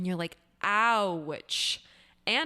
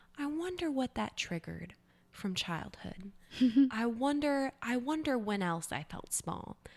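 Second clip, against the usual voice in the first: gentle, soft, light-toned, sweet voice; 5 semitones higher, 3 dB quieter than usual. Imitating a teacher who plays the I Wonder game: imitating a soft, sweet, light voice. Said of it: "this soft, sweet, light voice".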